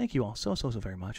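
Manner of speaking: soft, low, put-on public-radio announcer delivery. Thanking viewers at the end of the show, in an NPR voice. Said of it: "This is my NPR voice".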